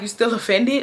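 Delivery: play-acted, casual, giggling through the words. Retelling asking a man if he is still offended: imitating own giggly question. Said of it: "I'm still giggly".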